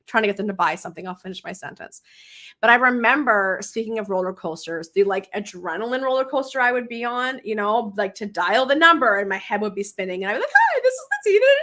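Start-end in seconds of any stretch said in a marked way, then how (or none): 10.5-11.4 very high, nervous, rushed, rattled-off phone voice. Recalling making sales calls from a script, imitating her high-pitched fast phone talk. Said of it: "I would be all high pitched and talking all fast".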